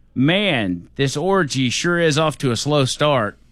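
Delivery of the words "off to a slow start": ordinary talk, nothing marked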